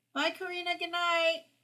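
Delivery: high, calling-out yell as if to another room. Saying goodbye and good night to a viewer: yelling. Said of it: "I'm yelling like she's in the room next door".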